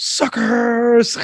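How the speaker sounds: very high-pitched, taunting character voice. Recalling the only good part of the fight scene: Scorpion voice. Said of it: "when Scorpion goes".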